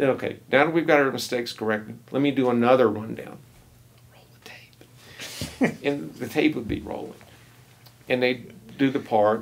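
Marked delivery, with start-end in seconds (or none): 4.1-5.8 soft, hushed whisper. Recalling a recording session with the players, retelling a whisper.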